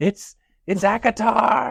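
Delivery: loud, high-pitched yelling. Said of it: "were just yelling the whole time".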